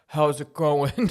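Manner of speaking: very deep, low bass voice. Retelling a boyfriend meeting the dad, imitating the dad's deepest voice. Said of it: "he has the deepest voice".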